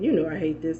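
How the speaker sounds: plain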